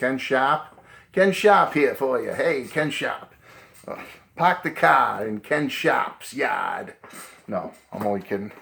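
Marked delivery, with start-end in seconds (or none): 0.0-6.9 slow, drawn-out New England Boston accent. Naming the author of a book series in his video: New England Boston accent. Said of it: "That's my New England Boston accent coming out".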